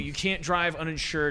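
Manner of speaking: ordinary talk, nothing marked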